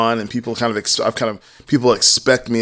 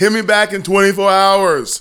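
put-on yelling, higher pitched; 9 semitones higher, 4 dB louder than usual. Imitating Jim telling people to reply in a day: imitating Jim yelling. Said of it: "He's like yelling it".

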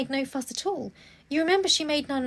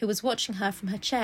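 ordinary delivery

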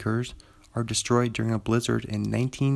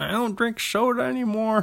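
put-on old man voice, higher pitch; 11 semitones higher than usual. Reading movie credits, then doing an impression: Jeff Bridges impression. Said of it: "my Jeff Bridges".

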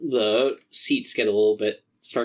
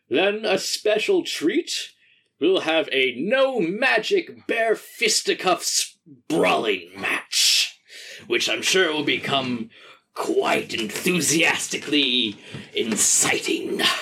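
big wood elf arena announcer voice, higher; 6 semitones higher than usual. Voicing an announcer welcoming the crowd to the arena: big wood elf arena announcer. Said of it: "a very big wood elf man comes out to the center of the arena and says".

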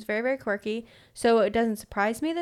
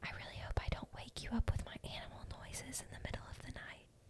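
voiced, bedtime-style stage whisper; 23 dB quieter than usual. Retelling what a new friend said at a sleepover: imitating a whisper. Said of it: "She whispers to me".

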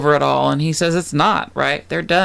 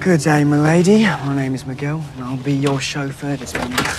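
put-on British accent; 2 semitones lower than usual. Recapping a scene, the speaker voices Miguel posing as a chauffeur, British chauffeur accent. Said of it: "pretending to be a chauffeur with a British accent".

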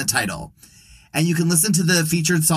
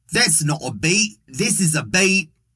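slow, attempted put-on Australian accent. Show host jokes about a beat before the episode: put-on australian accent. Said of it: "the only time I will attempt an Australian accent".

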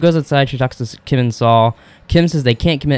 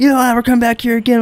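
put-on yelling, higher pitch; 12 semitones higher than usual. Retelling how the guy yells and kicks someone out: imitating someone yelling. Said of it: "And yells".

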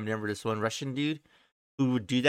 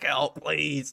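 put-on pleading voice, higher; 3 semitones higher, 3 dB quieter than usual. Retelling the cut man's plea at her door, imitating someone begging. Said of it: "begging her to open it and help him".

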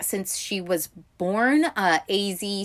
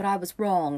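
New Zealand accent attempt drifting toward British. Quoting a female character from a series talking to Crosshair: failed Kiwi accent. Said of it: "i did not do a proper kiwi accent there that sounded more british".

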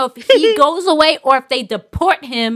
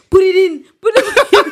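put-on Haitian-accented speech; 6 semitones higher, 4 dB louder than usual. You are retelling how a funny Haitian guy acted out a scene, imitating a Haitian accent. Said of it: "so he got like an accent".

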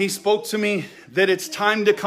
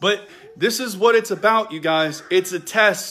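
ordinary talk, nothing marked

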